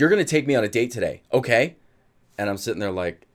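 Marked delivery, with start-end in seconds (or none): 0.0-1.8 put-on angry voice. Retelling what an upset girlfriend with arms crossed demanded: imitating an angry girlfriend. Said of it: "she's pissed off".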